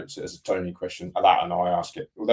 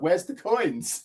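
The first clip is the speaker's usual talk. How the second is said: put-on very high, crestfallen, let-down little girl voice; 11 semitones higher than usual. Retelling what his two-year-old daughter said on finding a note: imitating his daughter's disappointment. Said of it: "She was so disappointed".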